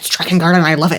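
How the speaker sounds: mocking put-on clueless-sounding voice. Mocking fans who love the game without understanding it: mocking imitation of a clueless fan. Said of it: "You're just like".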